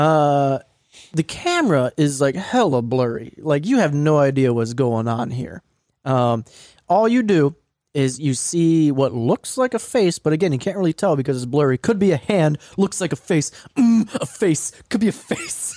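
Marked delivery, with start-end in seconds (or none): 11.8-15.7 unhinged, wild stand-up comic voice. Describing a blurry video clip as a joke: Dane Cook impression. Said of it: "I'm doing a Dane Cook impression".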